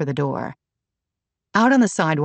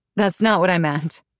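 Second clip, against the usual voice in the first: plain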